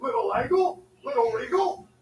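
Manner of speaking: put-on low, deep grown-man voice. Acting out Little Rock greeting the two kids: put-on deep voice. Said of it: "puberty came early for Little Rock".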